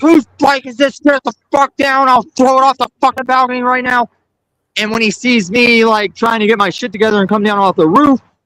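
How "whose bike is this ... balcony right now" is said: high, furious, raging screaming. Retelling how the landlord reacted on seeing the bike, mock raging yell. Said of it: "he just starts raging like".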